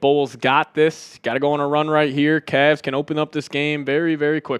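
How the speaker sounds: plain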